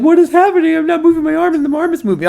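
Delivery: put-on panicked, baffled alarm, pitched high. Retelling own confusion at seeing arm moving on screen: retelling own panicked freakout. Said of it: "I'm freaking out".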